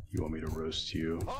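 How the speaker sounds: quiet, threatening low voice.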